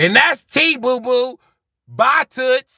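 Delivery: very high, loud, drawn-out put-on argumentative voice.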